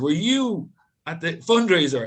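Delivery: put-on very heavy Italian accent. Retelling what an italian waiter said: imitating a thick italian accent. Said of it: "in a very thick Italian accent".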